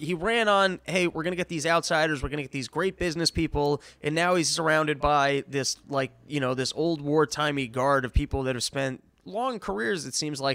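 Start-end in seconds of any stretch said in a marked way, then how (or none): none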